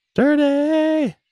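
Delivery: high, squeaky mock squeal on the word "dirty".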